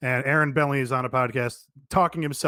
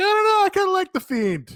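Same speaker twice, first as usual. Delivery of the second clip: very high-pitched, shrill put-on voice; 6 dB louder than usual. Mimicking the other speaker to their face: high-pitched impression of co-host. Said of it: "do I do that high pitched voice".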